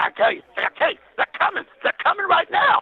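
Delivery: put-on, really eager, worked-up, high, enthusiastic voice. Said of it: "he said it real, real enthusiastic".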